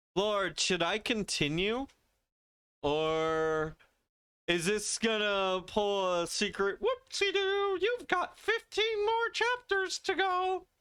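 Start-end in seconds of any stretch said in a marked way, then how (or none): 6.7-10.6 very high, squeaky, little cartoon mouse voice. Blurting out a playful exclamation: Mickey Mouse voice. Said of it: "I did that in a Mickey Mouse voice".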